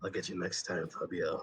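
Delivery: low, dropped mutter, as if to himself. Running the game, the speaker voices a character arriving on the warp pad, muttering under breath. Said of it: "Just under his breath, he, he mutters".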